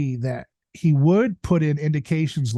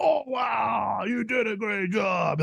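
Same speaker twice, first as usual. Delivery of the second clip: put-on gentle, soft, high, very slow baby talk; 6 semitones higher, 5 dB quieter than usual. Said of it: "like you say to a toddler".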